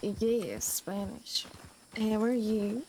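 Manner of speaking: very slow, stretched-out, dragging drawn-out words. Claiming to speak Spanish and greeting someone, in very slow talking. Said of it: "talking like this, all slow like?".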